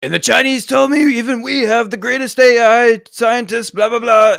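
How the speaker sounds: boisterous, blustering, very high-pitched and loud. Imitating how Trump normally sounds when reacting to a clip: boisterous Trump impression. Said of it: "worst Trump impression".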